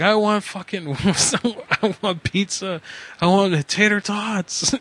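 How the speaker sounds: very slow, high-pitched, drawn-out yell. Retelling what he yelled into a drive-thru microphone, retelling a yell. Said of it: "And I just start yelling".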